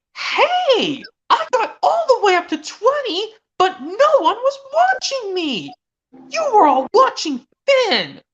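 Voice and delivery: angry, cross, very high-pitched, swooping voice. Speaker acts out a show's dragon character, imitating Cassie getting angry. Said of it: "she gets angry by the third strike, saying".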